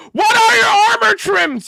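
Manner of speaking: aggressive, in-your-face yelling, very high and very loud. Repeating a question to show how aggressive it sounds, aggressive yelling. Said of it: "You see how aggressive that sounds?".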